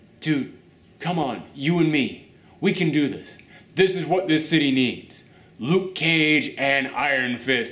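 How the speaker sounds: ordinary talk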